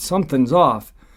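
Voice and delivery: ordinary talk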